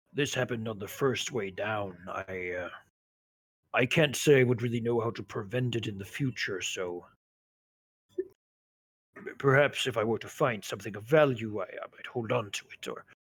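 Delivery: quiet, sheepish voice. Speaking in character, a little embarrassed: lowered voice. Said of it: "lowering his voice and says".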